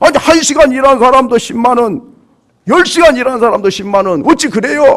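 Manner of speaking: loud, high-pitched angry protesting tone.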